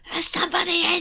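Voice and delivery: acted-out shouting. Retelling being on the loo while someone tried the door: imitating own shout. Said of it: "I shouted in the end".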